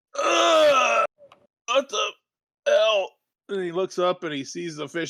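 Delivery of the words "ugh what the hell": very slow, loud coughing splutter, drawn-out "ugh". Narrating the game, voicing a character who sits up coughing up seawater. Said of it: "kind of coughs out a mouthful of seawater and says".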